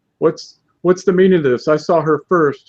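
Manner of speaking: put-on loud, high, rowdy, belligerent drunken yell. A player's character shoves Mortaron and yells out drunkenly: drunken yelling. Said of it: "yell out drunkenly".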